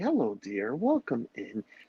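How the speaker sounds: put-on old Scottish nanny voice. Welcoming a young visitor in a put-on character voice, teasing about an odd habit. Old Scottish nanny voice. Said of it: "I turn into Mrs. Doubtfire".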